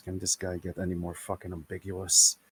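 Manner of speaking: hushed, half-whispered quiet voice. A storyteller voicing a character speaks to the players, half-whispering. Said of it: "and he whispers".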